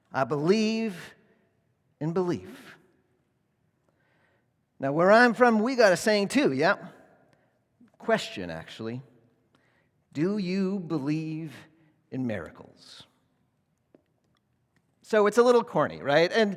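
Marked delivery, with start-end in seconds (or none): 0.2-13.1 put-on Midwestern drawl. Quoting a coach's inspirational speech to his team, imitating a Midwestern drawl. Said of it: "he says in his Midwestern drawl".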